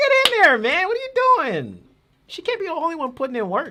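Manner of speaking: very high, very loud, shrill screaming. Complaining about guys who just stand there, screaming. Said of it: "Sorry, I'm screaming".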